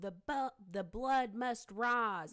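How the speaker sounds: man screaming. Retelling what a cult leader screamed for days: imitating a man screaming. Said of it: "he's screaming".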